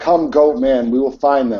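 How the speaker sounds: mild voice calling back across a distance. A player in a game calling back from the horse carcass, yelling back. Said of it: "I'll yell back from the horse carcass".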